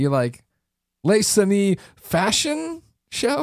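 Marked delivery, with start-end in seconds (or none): 1.0-3.4 upward questioning rise on fashion. Mimicking a co-host reading out a french game title, questioning rise on 'fashion'. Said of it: "you put like the questiony voice on fashion".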